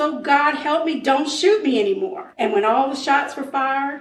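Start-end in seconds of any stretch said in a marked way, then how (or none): none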